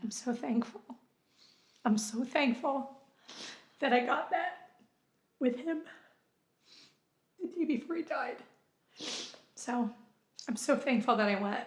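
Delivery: crying, tearful, halting speech, breaking up. Speaker recalling a last visit with someone who has since died, crying while talking. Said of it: "Now that everybody's seen me cry".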